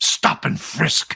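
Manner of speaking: venom-laced, contemptuous, spat-out delivery. Mimicking how others say a policing term, in a mock-venomous tone. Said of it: "they say it with such venom, with such venom, like".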